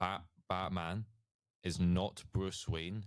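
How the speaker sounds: very slow, deliberate, spelled-out delivery.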